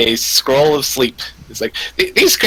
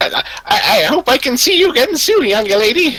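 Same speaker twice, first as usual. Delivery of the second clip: very high, stammering, doddering senile voice; 11 semitones higher than usual. A character thanks the young lady for a scroll and wand, senile character voice. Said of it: "I hope that wasn't too senile for you".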